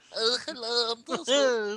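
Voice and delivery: high, silly character voice.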